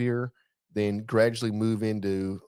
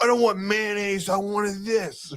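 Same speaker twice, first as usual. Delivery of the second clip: put-on very high-pitched, belligerent drunk ranting outburst; 11 semitones higher than usual. Joking about heavy drinking, acting out a drunk: imitating a belligerent drunk. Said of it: "Just get belligerent".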